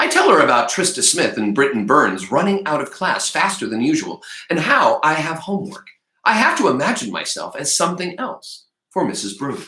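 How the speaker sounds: ordinary delivery, nothing marked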